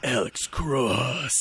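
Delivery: movie-trailer narrator voice. Imitating a nineties thriller trailer narrator: Don LaFontaine trailer voice. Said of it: "Don LaFontaine being like".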